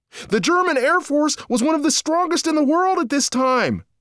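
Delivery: high hollered shout. A narrator reads a character calling history facts over his shoulder while running, yelling. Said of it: "Stop yelling history facts".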